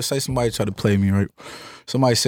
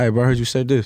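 composed, level-headed, calm, even voice. Confronting a bro about something he said: calm voice. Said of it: "And I'm saying in a calm voice, like".

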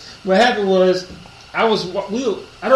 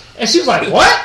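usual speaking voice

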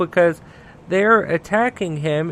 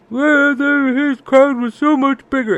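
mock high, loud, almost-in-tears shouting; 8 semitones higher, 5 dB louder than usual. Retelling the press secretary's first press conference about the inauguration audience, imitating Spicer screaming, almost in tears. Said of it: "Spicer was like screaming at the top of his lungs".

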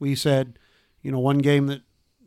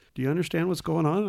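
hushed half-whisper; 3 semitones higher, 5 dB quieter than usual. Retelling what another player asked during the game: imitating a half-whisper. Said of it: "Chad whispers to me, he goes".

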